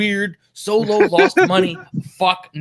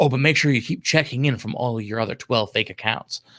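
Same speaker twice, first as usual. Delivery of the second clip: put-on mutter under breath, much lower; 6 semitones lower, 5 dB quieter than usual. Speaker quoting a woman's aside to her trolls, retelling an under-breath aside. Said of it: "like sort of under her breath".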